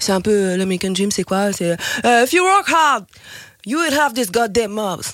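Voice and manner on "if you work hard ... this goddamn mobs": Texan accent laid on thick, put-on. Explaining the American Dream in French, the speaker voices it in a Texan accent. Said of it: "J'ai mis bien l'accent texan".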